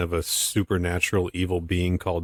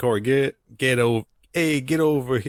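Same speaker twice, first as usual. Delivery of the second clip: botched attempt at a Chicago accent, pitched up; 6 semitones higher than usual. Voicing a cartoon series, the speaker tries an attempted Chicago accent. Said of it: "I can't do a Chicago accent".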